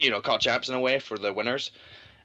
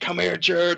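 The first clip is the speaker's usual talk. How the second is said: all-out screaming, high and frantic; 8 semitones higher, 3 dB louder than usual. Retelling how a quiet player screamed during a match: imitating Octane screaming. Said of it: "He was just screaming".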